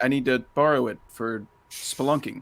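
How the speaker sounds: ordinary delivery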